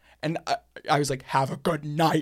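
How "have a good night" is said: mock mean delivery. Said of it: "as mean as".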